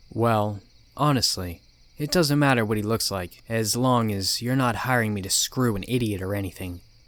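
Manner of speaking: usual speaking voice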